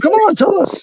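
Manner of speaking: very high, agitated, worked-up tone. Speaker demands the other man name a gym, agitated. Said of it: "you're getting so agitated right now".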